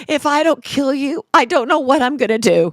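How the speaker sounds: tearful, desperate crying voice. Retelling what a woman in a quarreling couple said: imitating someone crying. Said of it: "and she's crying".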